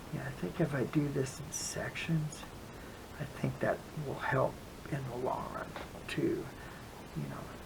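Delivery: soft unvoiced whisper, to oneself.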